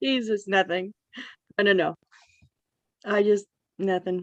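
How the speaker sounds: tearful voice, crying while speaking. Answering another speaker who asks what happened, crying while talking. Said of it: "Are you crying?".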